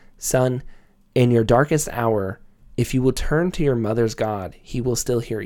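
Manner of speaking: ordinary delivery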